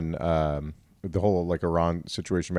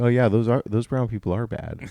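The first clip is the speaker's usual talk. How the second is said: ordinary talk, nothing marked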